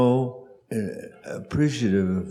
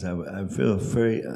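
plain

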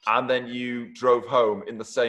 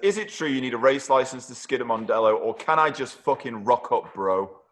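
plain

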